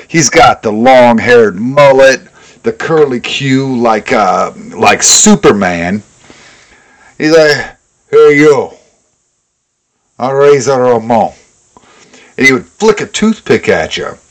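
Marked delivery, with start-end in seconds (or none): 8.2-11.4 put-on Cuban accent. Describing a debut promo, the speaker quotes Razor Ramon: fake Cuban accent. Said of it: "Talk like a Cuban".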